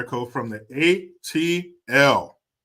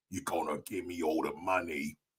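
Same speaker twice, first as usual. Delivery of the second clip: very low, hushed, quiet Cockney accent; 8 semitones lower, 13 dB quieter than usual. Demonstrating a movie-style accent during a shout-out segment: Cockney accent. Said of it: "the kind of accent you might hear in a Guy Ritchie movie".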